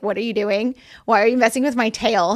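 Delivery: plain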